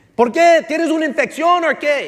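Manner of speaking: loud shouting.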